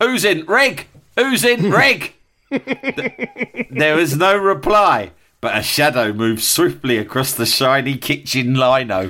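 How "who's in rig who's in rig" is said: mock shrill, very high teenage Yorkshire yell. Retelling a dream, calling over the banister toward the kitchen: retelling a shout in adolescent Yorkshire accent. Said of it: "shouted in my adolescent Yorkshire accent".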